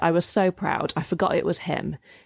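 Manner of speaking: usual speaking voice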